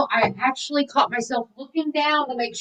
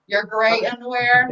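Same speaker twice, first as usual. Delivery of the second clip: ordinary delivery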